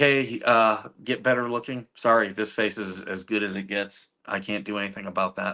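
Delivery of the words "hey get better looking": ordinary talk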